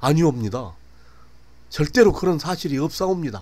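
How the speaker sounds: high, loud, trembling, terrified shout. Kim, accused by the constable, denies it, trembling, terrified shout. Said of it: "온몸을 바르르 떨며 사색이 된 얼굴로 소리쳤다".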